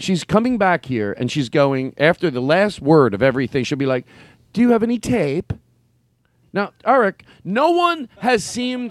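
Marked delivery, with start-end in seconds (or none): 4.5-5.5 put-on wannabe-British accent, pitched up. Imitating a niece who picked up the accent: imitating a put-on British accent. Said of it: "We're talking about a British accent".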